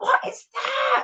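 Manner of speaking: put-on, very high-pitched mock scream. Retelling a quote seen on a bus in Cumbernauld: imitating Janet Street Porter screaming. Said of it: "Janet Street Porter scream. She screamed".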